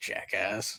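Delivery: muttered under breath. Voicing a character as guests walk out: muttered under his breath. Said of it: "you'll hear him under his breath".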